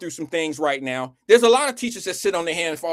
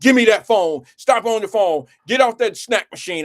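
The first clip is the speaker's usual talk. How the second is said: loud, bossy teacher voice; 4 semitones higher, 6 dB louder than usual. Describing how the kids acted out their teachers, imitating a bossy teacher. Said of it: "how bossy the teachers were".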